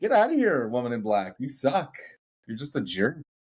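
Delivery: put-on very strong Canadian accent. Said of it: "You sound very Canadian right now".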